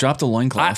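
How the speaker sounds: ordinary delivery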